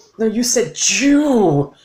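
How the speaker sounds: high, very slow, drawn-out, disgusted word, spat like curse.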